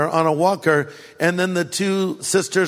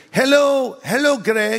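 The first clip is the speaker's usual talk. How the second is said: put-on old lady voice, much higher, slower; 6 semitones higher than usual. Recounting an elderly lady greeting Greg by name: old lady's accent. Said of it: "I'm trying to do their accent".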